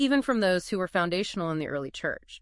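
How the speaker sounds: plain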